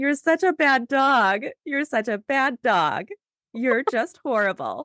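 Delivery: put-on kind, sweet, high, cute baby-talk voice. Showing how they talk to their two rescue dogs, sweet, kind, cute little voice. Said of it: "in this sweet, kind, cute little voice".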